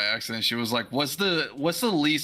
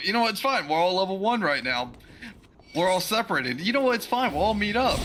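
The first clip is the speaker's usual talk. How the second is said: strained upbeat positive tone, pitched up; 7 semitones higher than usual. Retelling how Goose tried to stay positive: imitating Goose being positive. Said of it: "the only one trying to be positive about it".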